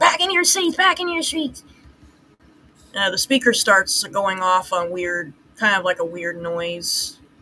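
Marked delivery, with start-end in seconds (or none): 0.0-1.6 play-acted very high, shrill, furious, angry yell. Retelling a scene where the principal yells over the speaker: imitating the principal yelling. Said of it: "yelling into the screamer".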